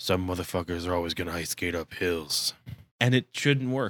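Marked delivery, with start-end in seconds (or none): 0.0-2.5 gruff put-on voice, pitched lower. Quoting a line from the movie's leading man: gruff Wesley Snipes voice. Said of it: "gruff voiced guy just, like, saying stuff like".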